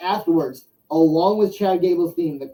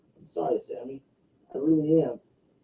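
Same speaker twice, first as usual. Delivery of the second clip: as sweet and soft as possible; 2 semitones lower, 5 dB quieter than usual. Retelling how Otis apologized to Sami Zayn, who was laying into him: imitating Otis's sweet voice. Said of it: "says in the sweetest voice".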